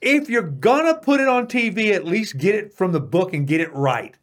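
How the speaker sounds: high-pitched mock screaming rant. Retelling reacting to a TV program about Jesus: retelling own screaming. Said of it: "and I'm screaming".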